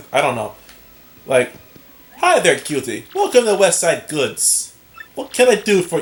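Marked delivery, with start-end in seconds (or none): 2.2-6.0 bad fake Brooklyn accent drifting Russian, swooping. Speaker tries out a Brooklyn accent on a greeting: attempted Brooklyn accent, sounds Russian. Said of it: "a more Brooklyn-esque accent ... That sounds more like Russian or German".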